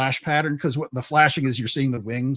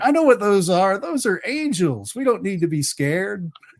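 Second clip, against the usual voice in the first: put-on high little boy's voice, small child; 7 semitones higher, 3 dB louder than usual. Describing what can be heard, the speaker acts out a little boy's words in a little boy's voice. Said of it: "you hear a little boy's voice going".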